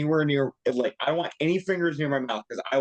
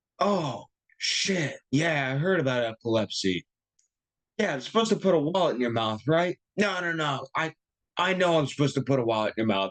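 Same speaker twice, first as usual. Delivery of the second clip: play-acted tipsy, sloshed-sounding drunk voice; 2 semitones higher than usual. Retelling how a grocery store security guard reacted on hearing about epilepsy: imitating a drunk-sounding guard. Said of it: "The way you're making his voice sound makes him sound like he's drinking on the job too".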